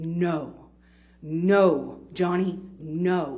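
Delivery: very slow, concentrated, calm, controlled, drawn-out. Recounting how a woman stepped between them to stop johnny: retelling a very slow, concentrated no. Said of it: "in just a very slow but very concentrated".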